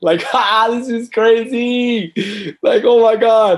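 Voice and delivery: slow, very high, drawn-out madman laughter through words. Recounting looking at the dented car in the rain, retelling laughing like a madman. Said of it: "laughing like a madman".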